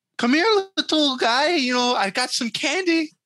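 very high leading-man voice, pitched way up. Quoting the main character of District nine: imitating Sharlto Copley in District 9. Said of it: "Sharlto Copley, the, the main guy in it".

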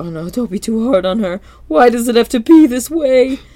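high, loud, distraught outburst. Retelling a cartoon scene, speaker voices Mr. Krabs, imitating Mr. Krabs losing it. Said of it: "losing it".

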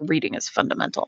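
muttering under the breath. Speaker retelling directing people to the restroom, retelling a mutter under breath. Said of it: "under my breath I'd be like".

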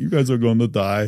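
put-on Russian accent. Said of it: "Russian accent".

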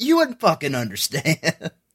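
hostile, aggressive, swooping delivery. Retelling how a character snapped at the caller: imitating an aggressive reply. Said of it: "he just gets weirdly aggressive with her".

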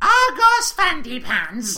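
put-on four-year-old child voice. Asked to say the name again as a four-year-old: child voice. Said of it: "say it again as a 4-year-old".

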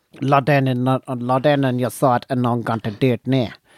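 South African accent impression. Retelling what a man said to him in the car, imitating a South African accent. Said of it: "it is a totally clear South African accent".

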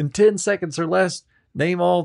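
put-on squeaky child quiz-host voice.

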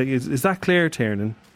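ordinary talk

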